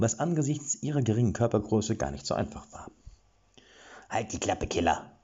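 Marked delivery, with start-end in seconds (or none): 4.1-5.0 sharp, snapping tone. Reading fiction, a character snaps at the gate guard he is helping up, snapping. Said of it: "schnauzte er".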